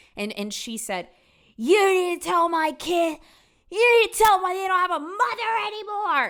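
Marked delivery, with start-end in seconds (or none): 1.6-6.3 very high, loud, squeaky, unhinged rant. Retelling a woman's call to her cousin, imitating Jody's squeaky, angry voice. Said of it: "She's got this squeaky, like unhinged kind of voice".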